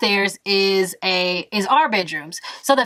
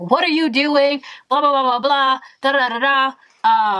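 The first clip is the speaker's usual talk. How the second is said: high-pitched heated nonsense babble, mock yelling; 5 semitones higher than usual. Retelling a roommate's late-night argument, imitating someone yelling. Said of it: "yelling back and forth".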